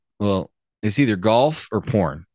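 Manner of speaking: ordinary talk, nothing marked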